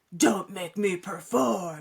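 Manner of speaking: low, deep growling voice. Retelling how a doll answered questions: imitating a deep growling voice. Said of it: "The doll answered in a deep, growling voice".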